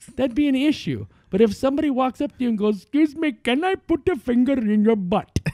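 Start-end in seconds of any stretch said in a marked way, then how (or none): 2.8-5.4 friendly, polite, put-on Indian accent. Imagining somebody walking up to you to ask something, Indian accent. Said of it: "Everything sounds a lot more friendly when you use an Indian accent".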